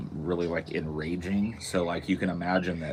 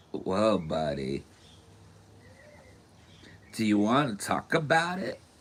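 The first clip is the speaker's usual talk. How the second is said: swooping, sing-song buddy voice, pitch swinging widely; 4 semitones higher than usual. Imagining a comedian telling the villain to calm down: Pauly Shore voice. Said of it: "Pauly Shore would be like".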